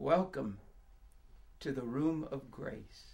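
very quiet, soft, low, knowing, reassuring voice. A hostess welcomes the narrator stepping inside, soft, knowing and reassuring. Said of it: "says softly".

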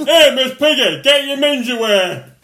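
very high, very loud frog puppet voice. Offering the others a Kermit impression, in Kermit the Frog voice. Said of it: "You want to hear my Kermit?".

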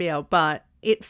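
ordinary talk

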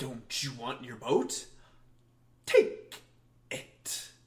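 clown voice that turns angry. Comparing two actors' versions of a scene, imitating an angry Pennywise. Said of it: "getting angry".

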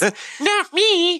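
put-on very high little baby talk voice. Telling how a story ends and voicing the baby, in a baby voice. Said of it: "That was a perfect baby impersonation".

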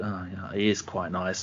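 soft, begrudging, grudging tone.

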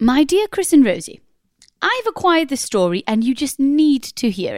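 put-on posh English accent. Reading aloud a message sent from a posh person, in a posh accent. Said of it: "I might do it in a posh accent".

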